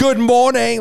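high, snippy, really passive-aggressive tone.

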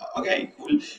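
unimpressed reaction.

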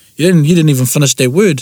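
plain

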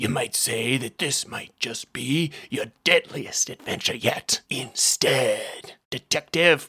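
gravelly, rasping voice. Reading a story aloud, a hidden figure in the back seat speaks: gravelly voice. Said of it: "a gravelly voice said".

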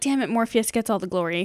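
ordinary delivery

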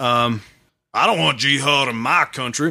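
attempted Alabama or Texas accent. Reading a quote aloud and trying a voice, an attempted Alabama or Texas accent. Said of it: "give it a shot at doing like... Alabama or whatever, Texas".

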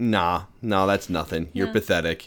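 put-on unbothered, calm, cool voice. Describing her facing a fire-breathing creature, acting out a calm, cool voice. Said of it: "she's just got this calm and cool voice".

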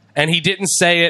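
plain

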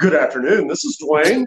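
put-on polished, professional, polite voice. Describing job seekers answering a potential employer's call, put-on interview voice. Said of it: "they put on their interview voice".

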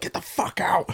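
mock sinister, evil Cockney, breathy whisper under breath. Retelling what the other speaker said to the mum: imitating an evil Cockney yell. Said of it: "like an evil Cockney version of yourself".

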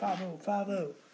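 mild mock scream. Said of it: "He just kept screaming".

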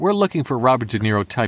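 plain

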